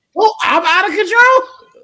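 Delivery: very loud, high, drawn-out voice. Answering another speaker who says they are out of control: raised voice. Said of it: "Look at you raising your voice".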